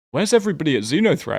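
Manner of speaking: high, fast, loud, puzzled calling voice.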